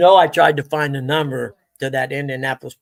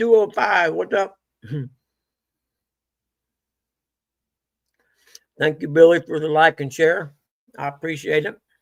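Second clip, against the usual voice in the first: talking with mouth full of food; 2 semitones higher than usual. Thanking someone for a like and share while eating oranges: talking with mouth full. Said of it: "I've got too many oranges in my mouth".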